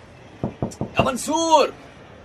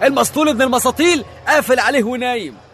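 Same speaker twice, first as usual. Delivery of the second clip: plain reading voice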